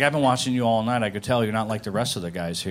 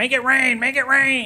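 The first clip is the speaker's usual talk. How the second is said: very high, drawn-out, stretched-out put-on shouting; 5 dB louder than usual. Retelling how a dancer yelled at him: imitating someone yelling. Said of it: "she started yelling at me".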